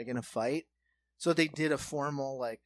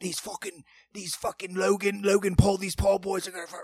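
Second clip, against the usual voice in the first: put-on loud, raised voice in a Cockney accent; 5 semitones higher, 7 dB louder than usual. Quoting a boxer's dad from a documentary, Cockney accent. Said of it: "he's got that like Cockney accent".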